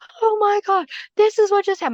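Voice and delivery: acted panicked screaming, very high pitched and rushed. Retelling running out of the room after something flew: imitating own past screaming. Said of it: "I ran out of my room and I was screaming".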